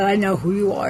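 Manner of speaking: usual speaking voice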